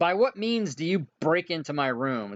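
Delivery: aggressive, hostile, confrontational delivery. Voicing an angry room owner confronting intruders: aggressive demand. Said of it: "in a very aggressive way and say".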